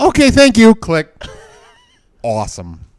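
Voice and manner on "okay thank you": very high-pitched, mangled broken English. Retelling a phone call from a Comcast caller: imitating terrible broken English. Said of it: "some lady in terrible broken English".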